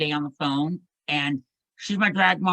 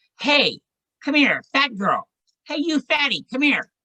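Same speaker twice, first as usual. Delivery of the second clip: very high, rude, obnoxious heckling taunt; 9 semitones higher, 3 dB louder than usual. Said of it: "this very large, obnoxious woman said".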